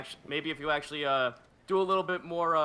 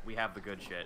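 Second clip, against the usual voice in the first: whisper, much quieter and lower; 6 semitones lower, 7 dB quieter than usual. In a role-play scene, a character whispers into her ear: whispering. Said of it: "whispers into her ear".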